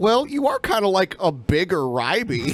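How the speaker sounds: ordinary talk, nothing marked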